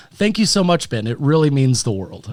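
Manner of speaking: earnest, sincere tone that sounds sarcastic. Thanking a co-host for having them on: sincere thanks that sounds sarcastic. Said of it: "I sound like I'm being sarcastic".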